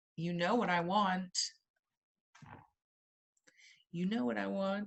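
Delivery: creepy, sinister, insinuating tone. Asking the students for something: creepy-sounding. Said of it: "that sounded creepy".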